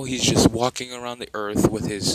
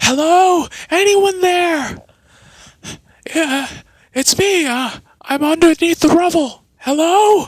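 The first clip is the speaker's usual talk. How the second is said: shrill, very high, loud screaming cry; 7 dB louder than usual. Voicing Naruto trapped under rubble: screaming for help. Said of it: "he screams out".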